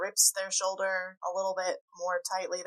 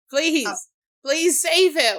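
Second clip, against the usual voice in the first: panting, breathless, desperate pleading tone; 9 semitones higher, 13 dB louder than usual. Voicing a gnome clinging to a hero's outfit: panting, desperate plea.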